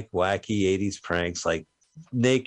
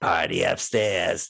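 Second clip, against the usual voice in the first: put-on frog-throated voice, croaky and rough; 2 semitones lower than usual. Retelling a movie scene, quoting a guy: imitating a froggy voice. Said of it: "this guy with a froggy voice goes".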